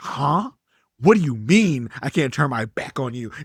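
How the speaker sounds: acted dumbfounded, disbelieving tone. Retelling Will's reply to the judge, imitating dumbfounded Will. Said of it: "Will is just dumbfounded".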